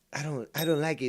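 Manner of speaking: high-pitched Latin American Spanish accent character voice. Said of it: "that sounds like Keith".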